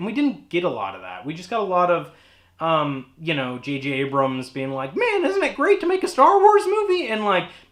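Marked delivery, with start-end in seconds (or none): 5.0-7.1 deliberately bad voice, very high and loud. Mocking what a director said in a documentary: terrible J J Abrams impression. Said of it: "that's a terrible J J Abrams impression".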